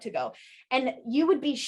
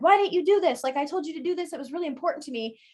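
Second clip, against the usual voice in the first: put-on restrained, high half-yell; 5 semitones higher than usual. Acting out a partner yelling during an argument: imitating someone yelling. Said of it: "someone's yelling at you and it's like".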